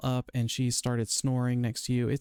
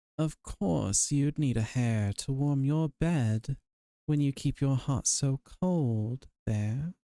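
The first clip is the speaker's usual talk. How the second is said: very sultry, seductive voice, laid on thick. A game master voices a figure calling out to passing player characters: very sultry voice. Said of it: "you hear a very sultry voice".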